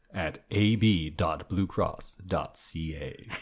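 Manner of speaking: very deep, low, quiet, ominous announcer gravitas. Reading out a web address with more gravitas, in a scary announcer voice. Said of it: "That was scary".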